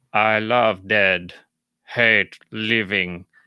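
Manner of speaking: every word dragged out, very slow. Speaker tries a voice he admits he can't really do, in Frankenstein's monster voice. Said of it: "the creature's voice".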